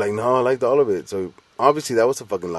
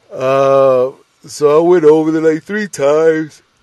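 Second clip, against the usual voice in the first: yawning speech, much higher and louder; 7 semitones higher, 10 dB louder than usual. Speaker recounting going over to record with someone, yawning while talking. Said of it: "I'm yawning so much".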